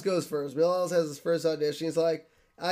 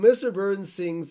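ordinary talk

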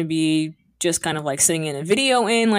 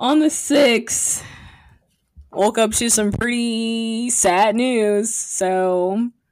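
laughing through near-tears, "so" drawn out; 4 semitones higher than usual. Speaker shares sad news with listeners, laughing so as not to cry: laughing through sad news. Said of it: "i'm laughing so i don't cry".

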